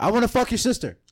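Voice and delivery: acted-out, very high, loud drunken holler. Retelling a drunken outburst with a buddy and his sister: imitating a loud drunken yell. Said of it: "I yelled out really loud".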